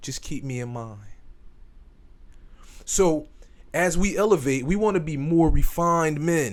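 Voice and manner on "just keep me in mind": very soft, quiet, gentle, soft-spoken voice. Retelling how he backed off and answered a man, in a soft voice. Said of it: "just soft voice".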